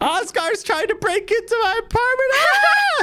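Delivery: very high, rising, shrieking panicked scream. In a role-played scene, a character reports a break-in while screaming in panic. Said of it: "there's just more screaming".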